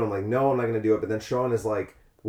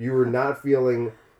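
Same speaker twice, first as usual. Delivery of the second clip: normal talking voice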